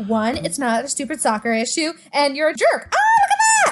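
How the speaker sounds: lively, animated comic delivery with big pitch swings. Acting out a movie scene where she counts to five: Amanda Bynes voice. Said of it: "when she counts to five and she's like".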